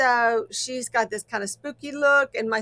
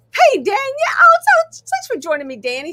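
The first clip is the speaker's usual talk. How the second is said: shrill, very high-pitched, loud, squeaky swooping voice; 13 semitones higher, 9 dB louder than usual. Speaker greets someone joining the show, in a high-pitched voice. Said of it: "Sorry about that high pitched voice there again".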